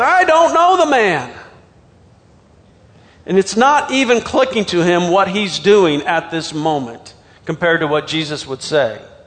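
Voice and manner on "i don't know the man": high, forceful, insistent delivery. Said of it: "denied it again with an oath".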